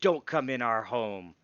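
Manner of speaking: territorial badger-like growl through the words. Narrating a badger guarding its tunnel as another creature passes: growling badger. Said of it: "growl at Globagul as it passes and says".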